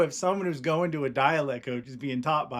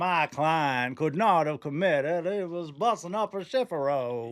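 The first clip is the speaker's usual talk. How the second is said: put-on movie-style Hollywood Southern accent, hard R's. Doing a bit about a movie lawyer addressing the judge, Hollywood Southern accent. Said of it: "this bit about the Hollywood Southern accent".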